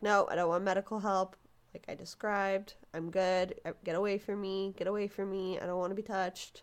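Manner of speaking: usual speaking voice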